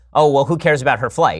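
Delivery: normal talking voice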